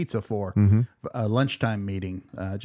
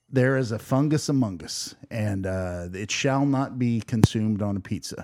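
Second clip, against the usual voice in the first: ordinary talk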